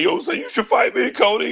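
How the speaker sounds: very high-pitched, begging, pleading voice. Retelling how Seth asked Cody for a fight, imitate someone begging. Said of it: "Seth was on there like begging".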